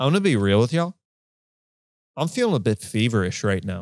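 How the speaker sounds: mock-deadpan, flat delivery. Retelling how William spoke to a club audience, imitating William's deadpan. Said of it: "William looks deadpan into the audience and goes".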